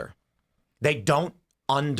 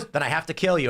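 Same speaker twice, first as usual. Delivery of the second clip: ordinary talk, nothing marked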